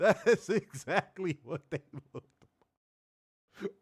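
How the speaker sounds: speech broken by laughter. Reacting to a clip of a show: laughing while talking. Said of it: "I can't stop laughing".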